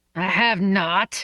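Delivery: growling indignantly. He denies her teasing accusation, with an indignant growl. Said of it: "he growled indignantly".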